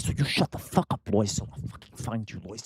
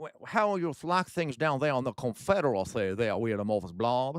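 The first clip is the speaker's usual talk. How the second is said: horrible, clumsy put-on Southern accent; 2 semitones higher than usual. Teasing the other speaker with a question, in a horrible fake Southern accent. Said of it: "that was a horrible accent".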